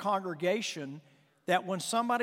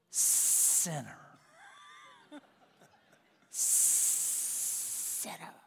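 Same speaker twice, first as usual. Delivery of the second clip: hissing, whispered snake voice; 8 dB quieter than usual. Acting out how self-righteous people addressed sinners, speaking like a snake. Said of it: "they probably said it like a snake would".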